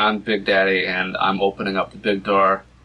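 normal talking voice

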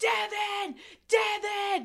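acted, very high screaming. Retelling a tense scene, the speaker reenacts a man screaming Devin's name at top of lungs. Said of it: "starts screaming Devin's name at the top of his lungs".

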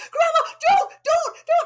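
put-on shrill child's scream, very high and very loud. Retelling how a granddaughter screamed at her in a hot tub: imitating a child screaming. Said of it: "she started screaming".

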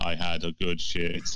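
mechanical, machine-like robot delivery. Recalling an old interview with friends, robot voice. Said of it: "in his robot voice".

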